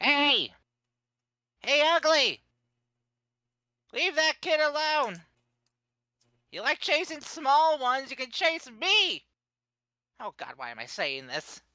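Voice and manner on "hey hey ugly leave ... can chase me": very high, shrill, very loud taunting yell. Throwing a stone at a creature and taunting it, yelling at it. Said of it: "just chuck it and just yell".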